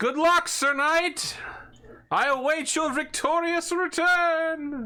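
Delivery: ringing, loud, very high call-out. As the knight proceeds on foot, Smeggy calls after him: Smeggy's loud call. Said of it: "Smeggy loudly goes".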